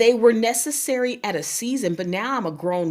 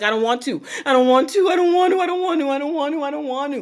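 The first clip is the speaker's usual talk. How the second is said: high, mock tearful crying, repeated; 6 semitones higher than usual. Retelling being picked up off the studio floor: retelling own past crying. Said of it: "and I'm crying".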